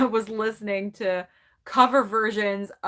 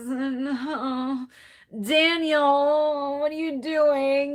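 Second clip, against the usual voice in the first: very slow, slurred, high, drugged-sounding drawl; 5 semitones higher than usual. Show how she talked in those moments to Daniel, as Anna Nicole Smith sounding drugged. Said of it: "she talked like this".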